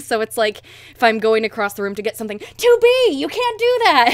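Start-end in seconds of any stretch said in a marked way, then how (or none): 2.4-4.2 very high, overblown, drawn-out video-game character yell. Making fun of a fellow voice actor's game line: mocking 9S yelling. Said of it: "I make fun sometimes of the way he just yells".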